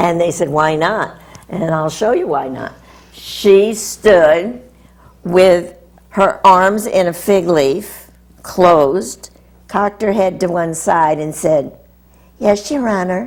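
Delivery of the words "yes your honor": put-on small, childlike, girlish little girl voice. Retelling how a woman answered the judge in court, in a little girl voice. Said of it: "in a little girl voice".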